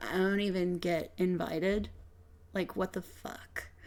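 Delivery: grumbled muttering under the breath. In a tabletop game, a player speaks as their character Veronica, muttering. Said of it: "Veronica is just muttering".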